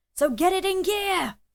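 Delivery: very high, shrill, furious, drawn-out angry yell. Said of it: "keep yelling for this guy's entire dialogue tree".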